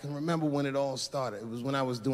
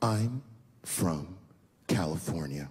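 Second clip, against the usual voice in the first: very low, deep, condescending, talking-down tone; 8 semitones lower than usual. Retelling how a woman answered the speaker's question, mimicking a condescending tone. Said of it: "very condescendingly".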